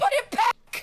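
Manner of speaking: very high-pitched, strained, urgent cry. Describing the bard screaming at them on the battlefield, imitating the bard screaming. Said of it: "the bard is screaming at me".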